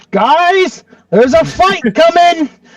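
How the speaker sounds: high, in-character mock yell.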